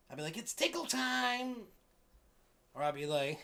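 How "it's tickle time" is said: silly put-on clown voice, very high. Describing how they scare people and make them laugh, clown voice. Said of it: "perfecting my clown voice".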